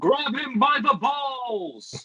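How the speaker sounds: screaming, yelling. Playing a spectator standing up in the crowd: screaming from the crowd. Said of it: "I stand up in the crowd and scream".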